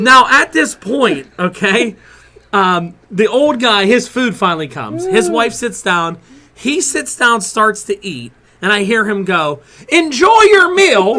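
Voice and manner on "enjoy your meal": put-on very loud call, pitched up. At Taco Bell, retelling what an old man said as he started eating: retelling a loud remark. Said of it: "real loud like that".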